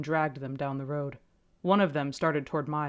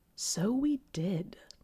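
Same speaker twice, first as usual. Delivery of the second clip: cold, sly, sliding like a snake, pitched up; 5 semitones higher, 3 dB quieter than usual. Reading a story aloud, voicing a snake-like man: sly, cold voice. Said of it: "his voice sly and cold".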